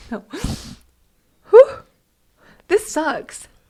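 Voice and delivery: crying through words. Talking about missing married life, crying while talking. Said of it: "It's good to cry".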